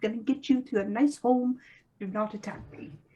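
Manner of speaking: low-key, mild, grumbly voice. As a wild tree figure tapping the trunk while calling his brother, grumbling a bit. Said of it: "he kind of grumbles a bit as he kind of taps the trunk and says".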